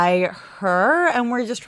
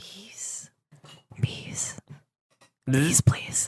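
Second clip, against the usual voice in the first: soft, hushed, barely-there whisper; 4 semitones lower, 8 dB quieter than usual. In a tabletop game, speaking as their character to some bees, whispering. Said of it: "So I just kind of whisper".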